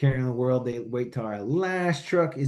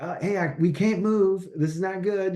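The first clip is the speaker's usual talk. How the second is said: play-acted dry, sarcastic radio voice, pitched up; 7 semitones higher than usual. Retelling a radio call after the fuel line was cut: imitating Niehaus's sarcastic tone. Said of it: "sarcastic, that's just how he came over the radio".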